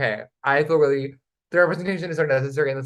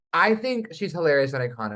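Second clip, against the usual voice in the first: usual speaking voice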